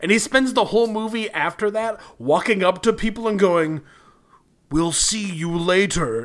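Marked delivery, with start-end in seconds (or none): 4.7-6.3 slow, drawn-out, creepy villain voice. Describing a movie character, the speaker quotes his line in an Agent Smith voice. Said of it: "in the exact Agent Smith voice".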